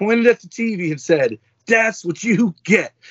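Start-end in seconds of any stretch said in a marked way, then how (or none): 1.7-2.9 put-on young child voice, pitched higher. A father retells his daughter's reaction to Darth Vader on TV, imitating Bella. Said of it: "My 5-year-old daughter jumped off the couch".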